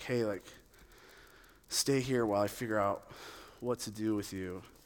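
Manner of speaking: soft, low, weary, exasperated sighing tone.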